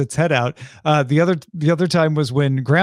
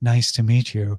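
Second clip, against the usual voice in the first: breathy character voice, much lower; 5 semitones lower than usual. Recounting a scene where a woman is introduced: Miss Hanson's very breathy voice. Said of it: "in a very breathy voice".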